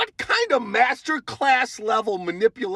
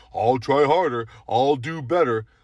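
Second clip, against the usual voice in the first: dopey, dim-witted voice; 8 semitones lower than usual. Describing how video makers imitate their boyfriends, in the dumb boyfriend voice. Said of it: "they're all use the dumb boyfriend voice".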